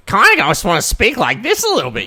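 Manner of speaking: very high, loud, swooping voice. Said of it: "Nardwuar videos, so I'm like".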